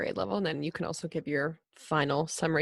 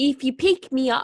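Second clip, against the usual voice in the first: put-on Australian accent that comes out British; 8 semitones higher, 8 dB louder than usual. A speaker tries an australian accent and another says it sounds british: attempted australian accent. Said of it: "No, that's British".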